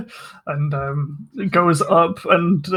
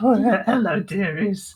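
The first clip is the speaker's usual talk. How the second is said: mock elderly woman voice. Acting out a new character's entrance, in an old woman voice. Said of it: "old woman will kind of crookedly".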